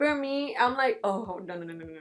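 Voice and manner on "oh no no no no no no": acted fright, lower and quieter. Retelling how they react to scary stories: imitating own scared reaction. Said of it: "I'm so scared".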